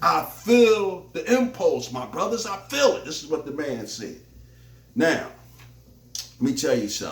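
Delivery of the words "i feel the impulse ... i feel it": put-on fervent, passionate, high-pitched voice, stretched out. Repeating what the man said to his brothers, acting out passionate conviction. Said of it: "with a lot of passion and a lot of conviction".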